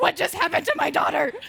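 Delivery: mock very loud, fast, frantic freaking-out cry. Retelling how the mom reacted after fainting: imitating mom freaking out. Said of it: "My mom was also freaking out".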